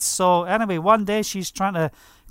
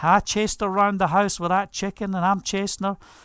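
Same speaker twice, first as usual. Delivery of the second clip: ordinary talk, nothing marked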